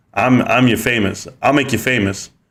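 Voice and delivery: normal talking voice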